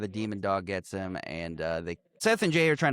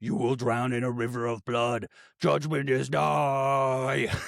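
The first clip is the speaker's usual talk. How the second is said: drawn-out, possessed demon voice. Recounting a scene where a demon voice comes from a man, demon voice. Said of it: "you hear a demon voice that goes".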